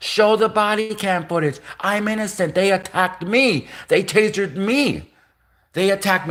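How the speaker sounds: repeated screaming. Retelling his own courtroom protest of innocence: retelling his own screaming. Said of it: "eventually I was screaming".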